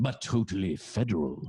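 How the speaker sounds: put-on flamboyant voice. Reading a book's prediction aloud in its author's voice: flamboyant voice of the author. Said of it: "he has a very flamboyant voice, so I'm just gonna do his voice".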